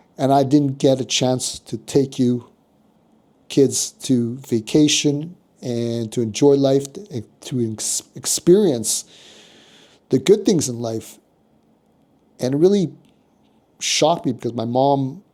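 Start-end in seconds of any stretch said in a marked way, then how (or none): none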